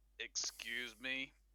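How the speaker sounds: very gruff, groggy, half-awake tone. Imagining waking to someone walking around your dark room, gruff, half-awake voice. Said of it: "Said in a very gruff, half awake".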